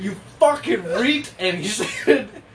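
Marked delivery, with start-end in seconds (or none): 0.0-1.3 mock all-out high, loud screaming yell. Retelling how one friend snatched a bag from another, retelling a friend's scream. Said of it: "he just screams".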